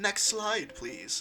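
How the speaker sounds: prim, proper voice. Recalling a time traveling detective character's slideshow on a stream, imitating someone all prim and proper. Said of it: "like all prim and proper".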